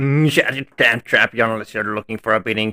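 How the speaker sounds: put-on rough, threatening voice, all over the place. Voicing a character's line: attempted rough voice. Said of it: "how to do a roughen voice like that".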